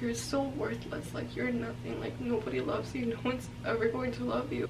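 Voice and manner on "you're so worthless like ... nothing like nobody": plain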